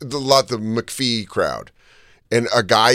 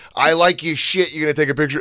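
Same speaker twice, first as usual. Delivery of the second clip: put-on brash worker voice, higher pitch; 6 semitones higher than usual. Retelling how fans call someone over, construction worker energy. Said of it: "the construction worker energy where they're like".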